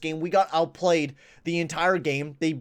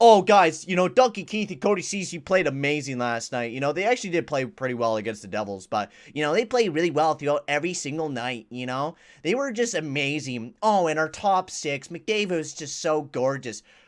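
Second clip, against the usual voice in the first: ordinary talk, nothing marked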